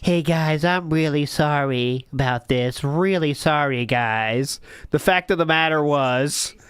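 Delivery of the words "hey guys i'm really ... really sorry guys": put-on, hollow, insincere tone. Mocking the streamer's apology while miming slamming his controller down: mock apology imitating him. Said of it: "Slamming his controller down".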